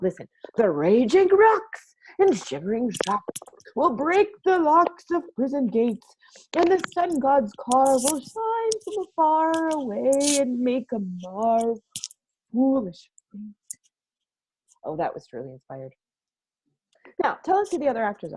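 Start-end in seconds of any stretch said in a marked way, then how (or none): 0.6-13.4 slow, ranting and raving tyrant style. Showing how to play a tyrant, ranting and raving like Hercules. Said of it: "I would rant and rave really well, like this".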